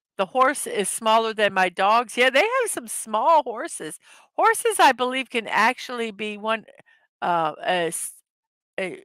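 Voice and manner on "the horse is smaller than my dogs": usual speaking voice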